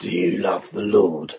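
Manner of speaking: very deep, hushed, gravelly murmur. Retelling how a man in a quiet carriage suddenly turned and asked: imitating a man's gravelly voice. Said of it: "In that kind of gravelly voice".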